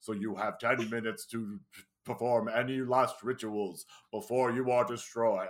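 put-on nice deep voice. Retelling a disembodied cube's line to another speaker: imitating a nice deep voice. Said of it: "a disembodied cube in a nice deep voice".

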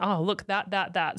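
ordinary talk

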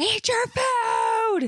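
shrill, very high shout. Comparing Tom Hanks yelling at his dogs to their husband, the speaker imitates him: imitating her husband yelling. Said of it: "It sounded just like my husband".

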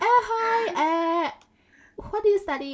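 very high drawn-out voice. Retelling how a friend first spoke to her: imitating Michelle's way of talking. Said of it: "I don't talk like that".

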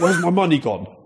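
put-on fury, high pitch. Retelling how a guest came in demanding money: imitating a furious demand. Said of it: "he came in furious one day".

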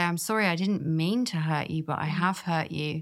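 plain

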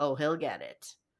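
low, ominous, menacing, threatening delivery. Retelling Dad's reply from a show, said mock-menacing. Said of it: "I just said that way more menacingly than it was said".

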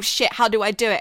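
plain

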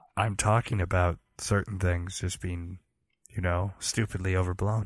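whispered speech. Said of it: "I can whisper into my microphone, too".

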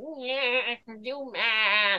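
dopey, goofy cartoon dad voice, "do" stretched out. Retelling a cartoon episode, speaker repeats the line: Peter Griffin voice. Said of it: "Imagine that was a proper Peter Griffin voice".

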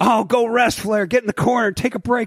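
wrestling announcer voice. Retelling commentary praising Flair during a match: imitating Bobby Heenan. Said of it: "Bobby the Brain talking about how awesome Flair is".

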